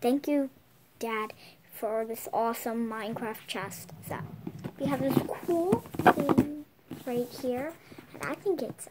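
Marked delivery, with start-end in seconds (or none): none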